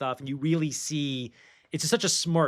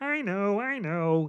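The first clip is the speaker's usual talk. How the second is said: put-on frog puppet voice, higher pitch; 7 semitones higher than usual. Describing how Clark in the Superman movies sounds: Kermit the Frog voice. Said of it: "Clark sounds just like Kermit".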